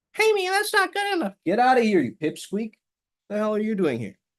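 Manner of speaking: put-on voice in another pitch. Speaker demonstrating the little voice in your head, different-pitched inner voice. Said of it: "give that voice a different pitch".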